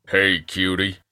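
put-on cowboy accent. Taking a turn in the game, a player delivers the greeting in a cowboy accent. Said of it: "in our best cowboy accent".

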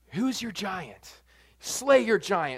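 dramatic, cool movie trailer announcer voice. Quoting the usual sermon line about David's giant in a cool movie theater voice. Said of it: "in that cool, like, movie theater voice".

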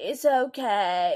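British-sounding drawl with okay drawn out. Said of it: "a good [name] impression".

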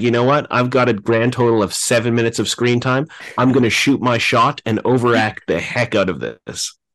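plain

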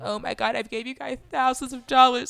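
teary, sobbing, loud and high-pitched crying. Acting out a woman wanting her dog back: imitating someone crying. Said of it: "she's crying like".

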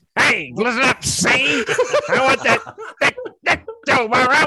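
put-on very high, swooping old-time gangster voice. Riffing on a woman character, voicing her as Edward G. Robinson would. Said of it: "Sounds like she's played by Edward G".

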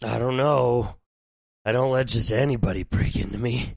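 creepy, eerie, unsettling voice. Speaker voices a character addressing the group, in a creepy character voice. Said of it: "Your voice is so creepy".

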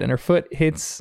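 ordinary talk, nothing marked

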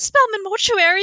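play-acted ecstatic delivery. Recapping a show, acting out Hilda answering the mortuary phone, mock-happy. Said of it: "she's just so happy".

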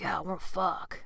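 soft, bro-style dude voice. Describing a hookup, she shows the type she never is: dude voice. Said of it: "That's my dude voice".

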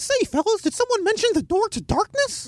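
squeaky, way-up-high voice. Speaker reads out a tweet attributed to Mickey Mouse, in Mickey Mouse voice. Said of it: "I just wanted to sit talking to Mickey Mouse voice".

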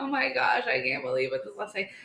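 put-on tearful crying to oneself. Retelling sitting in the driveway after a last day: retelling crying to oneself. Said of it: "crying to myself because I was like".

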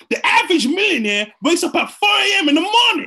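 high-pitched, loud, hyped sermon voice. Retelling a motivational voice the speaker heard, E.T. the Hip-Hop Preacher impression. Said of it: "sounded like that".

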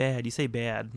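playful, teasing, mocking jab. Imitating a girlfriend teasing how a word is said: imitating girlfriend mocking. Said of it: "My girlfriend makes fun of me".

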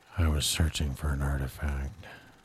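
put-on gruff actor voice. Joining a comedy bit as Indiana Jones: Harrison Ford impression. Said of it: "it's Harrison Ford".

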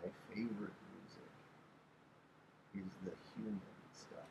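very quiet, soft, fast, hushed murmur.

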